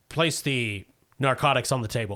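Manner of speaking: robotic, computerized machine voice. Voicing a speaker that gives an order from the dark: computerized voice. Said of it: "It sounds like a computerized voice".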